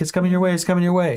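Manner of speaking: high-pitched, urgent calling voice. Recounting a search near a bridge, the speaker retells yelling a warning to the listener. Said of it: "was yelling".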